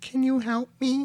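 very high, slow, drawn-out pleading call. Retelling a story of a voice heard outside a garage: imitating a niece's voice calling for help. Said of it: "again, he hears".

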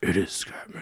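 superhero voice, whispered. Repeating Sid's line to tease him: Batman voice. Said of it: "You said that one specifically like Batman".

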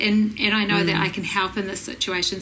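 usual speaking voice

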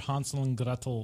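words said in a German accent.

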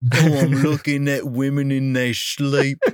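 put-on British accent delivered in a rocker style. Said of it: "Every time I do like a British guy impression".

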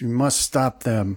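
screeched, urgent, screeching delivery. Game narrator voices Lazarus mid-incantation, Lazarus screeching. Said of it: "And Lazarus screeches".

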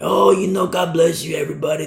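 put-on cool rock-star voice, relaxed swagger. Speaker mocks young pastors who talk like rock stars, mocking rock-star voice. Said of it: "They do their rock star voice".

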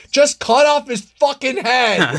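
shrieking yell, very high and drawn out. Retelling screaming at the TV during a horror film: imitating own screaming. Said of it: "I was just screaming at the T V".

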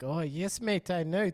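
terrible put-on South African accent, high. Speaker mimics an actress's terrible accent in a film role, bad south african accent. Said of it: "her accent would sort of go from like".

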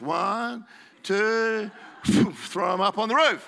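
high, loud, straining heave with effort.

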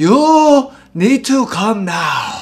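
put-on exaggerated Korean accent, shrill, loud, very high. Mimicking a korean mom voice no real person talks like, in an exaggerated korean accent. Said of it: "It's a very authentic Korean accent".

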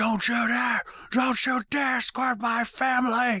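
acted, very high, shrill, furious yelling outburst. Quoting a man who got furious at his friend, retelling a furious outburst. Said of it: "got furious".

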